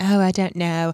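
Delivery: put-on cranky British accent, woman's voice. Retelling a story about a Thanksgiving invitation: mock-cranky Olivia, British accent. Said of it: "keep doing the British accent".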